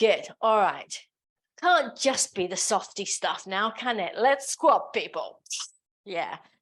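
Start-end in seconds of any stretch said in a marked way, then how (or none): 4.2-6.4 put-on, forced, sing-song enthusiasm, more than felt. A fitness instructor leading a class into squats, with forced enthusiasm. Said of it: "I'm saying it with more enthusiasm than I feel".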